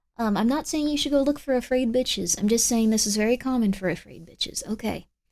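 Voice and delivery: plain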